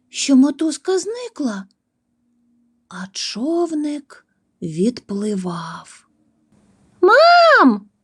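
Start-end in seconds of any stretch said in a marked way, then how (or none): 7.0-7.7 very high, long, drawn-out shout. Narrator reading a story; a character adrift in a boat calls out: shouted. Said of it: "закричала Сісі".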